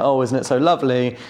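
ordinary talk, nothing marked

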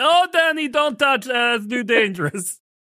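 very high, put-on character voice. Acting out a scene where Johnny warns Denny: Tommy Wiseau impression. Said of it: "You do a very good Tommy Wiseau".

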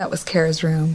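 ordinary talk, nothing marked

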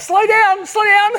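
very high, loud, anxious and worried shouting. Retelling watching her fly down the hill, the speaker re-enacts a yell. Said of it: "I'm yelling out".

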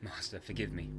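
ordinary delivery, nothing marked

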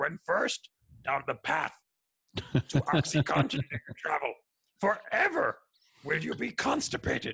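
high little wise-creature voice. Explaining how they talk about narcotics, in a Yoda voice. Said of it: "I like to use the Yoda voice".

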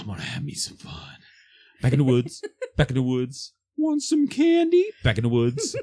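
distorted mimicking voice, loud, swooping pitch. Speaker recalls a woman's words replaying in their head: Predator-style voice mimicry. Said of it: "it replayed in my head like the fucking Predator".

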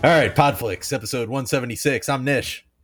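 put-on obnoxious sports radio voice. Opening the episode as a put-on douchey sports talk radio host. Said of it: "the douchier of the two guys on sports talk radio".

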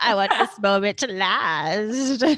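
put-on creepy man's voice. Retelling a scene about a creepy man, voicing his line in a creepy put-on voice. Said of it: "he's really creepy".

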